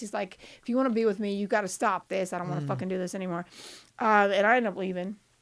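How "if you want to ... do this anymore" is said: put-on angry voice. Retelling what Carl said while pissed: imitating pissed-off Carl. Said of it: "Carl's pissed".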